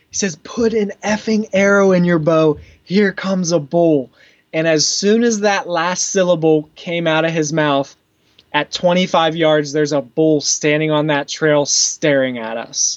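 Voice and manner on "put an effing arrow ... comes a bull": mock intense whisper, higher. Retelling what a companion whispered on smelling a bull, retelling an intense whisper. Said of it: "the most intense whisper I've ever heard".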